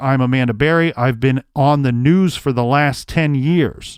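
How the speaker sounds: ordinary talk, nothing marked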